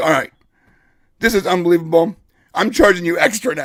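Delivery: fed-up, outraged, exasperated outburst. Retelling his own reaction to an unbelievable scene, retelling his indignant outburst. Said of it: "And I start getting super indignant".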